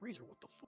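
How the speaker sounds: barely voiced, whispered grumbling mutter under the breath. Voicing a character who is handed a rock: muttering under his breath. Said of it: "mutters under his breath".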